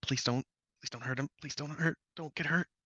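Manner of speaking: quiet under-the-breath half-whisper. Voicing Nodus as he holds Brody back: half-whispering Nodus. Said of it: "Nodus is just kinda whispering to him".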